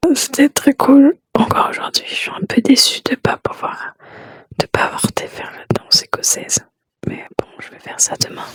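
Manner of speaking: soft, hushed whisper under the breath. Late at night, speaker talks quietly so as not to wake friends: whispering. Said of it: "je chuchote".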